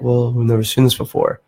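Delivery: normal talking voice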